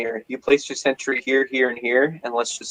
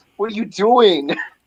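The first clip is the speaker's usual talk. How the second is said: mock yell, higher; 8 semitones higher than usual. Retelling how the team yelled at a teammate: imitating yelling at a teammate. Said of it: "we were yelling at him".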